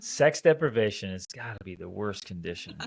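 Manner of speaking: ordinary delivery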